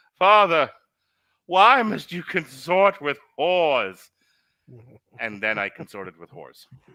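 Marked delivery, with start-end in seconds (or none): 0.2-4.0 put-on high, drawn-out quasi-British accent. Describing how he had a man turn to him and speak, in a quasi-British voice. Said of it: "in his like quasi British voice".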